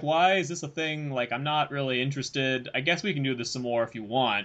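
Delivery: normal talking voice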